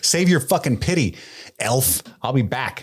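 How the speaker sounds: angry, unbending tone. Recapping a show scene, voicing a character's line, mock-angry and resolute. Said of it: "She's angry and she's resolute".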